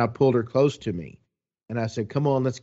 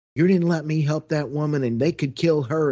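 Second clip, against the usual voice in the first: mock-angry drunken ranting, higher and louder; 5 semitones higher, 3 dB louder than usual. Retelling how a drunk woman cussed him out in a parking lot, imitating her cussing. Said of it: "she's cussing me".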